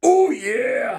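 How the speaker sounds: loud, high-pitched yell in a wrestler style. Answering a request for an impression: Macho Man impression. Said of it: "how's your Macho Man impression?".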